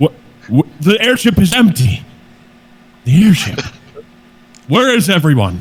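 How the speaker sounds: reverberant, echoing voice. Role-playing a character greeting a newcomer, in an echoey voice. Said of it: "So it's very echoey".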